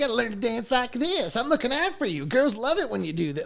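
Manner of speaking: squeaky, very high, sing-song voice with swinging pitch. Describing a cartoon scene, imitating Roger Klotz. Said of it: "I can't do his voice".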